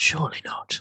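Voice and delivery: hushed whisper, barely voiced, breathy. Reacting in character to a figure dressed like Iglot: whispering. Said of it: "I'm gonna whisper".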